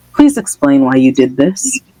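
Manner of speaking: composed, calm, steady, level voice. Retelling a story scene, voicing Dumbledore: quiet, calm Dumbledore voice. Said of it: "very quietly and very calmly".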